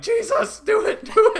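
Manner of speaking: shrill, booming, very high, very loud drawn-out scream. Recalling sitting in a bunker opening urging someone on, retelling a scream.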